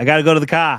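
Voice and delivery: put-on Boston accent, very loud. Answering a request to do a Boston accent: Boston accent. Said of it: "let's hear your best Boston accent".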